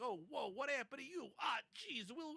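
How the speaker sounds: put-on New York accent. Retelling a movie scene, imitating Wil Wheaton's New Yorkie accent. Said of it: "New Yorkie kinda accent over here".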